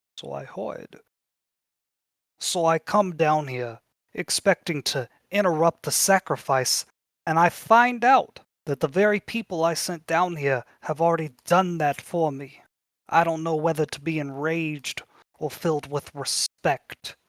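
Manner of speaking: creature voice. A game master voices a beholder speaking into the players' minds: Xanathar the Beholder voice. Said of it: "let me get his voice real quick".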